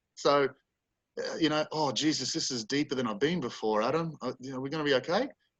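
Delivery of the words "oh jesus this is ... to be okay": put-on worried, cautious grandmother voice. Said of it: "I would talk to Nana in this setting".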